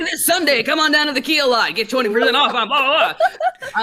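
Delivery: high-pitched, fast radio car commercial announcer voice.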